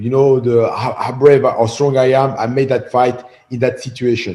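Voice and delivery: plain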